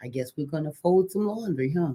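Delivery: mock muttering under breath. Retelling a remark made when mad at waiting: imitating muttering under breath. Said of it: "under my breath".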